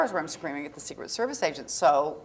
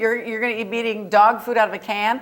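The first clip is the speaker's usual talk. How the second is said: mock, raw, screamed tirade; 5 semitones higher, 5 dB louder than usual. Retelling a scene shouting at the Secret Service agent: imitating screaming at someone. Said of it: "I'm screaming at the Secret Service agent".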